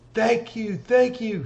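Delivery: delighted, high, all-happy voice. Game master voices a woman thanking a player's character, happy. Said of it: "She's all happy".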